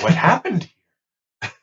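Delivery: worried, caring, concerned tone. Suggesting a line for a tone-of-voice game, concerned tone. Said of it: "I'll say it with concern".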